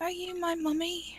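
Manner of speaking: high, very soft whisper. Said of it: "like, whispering".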